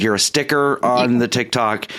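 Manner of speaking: normal talking voice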